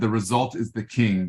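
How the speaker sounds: plain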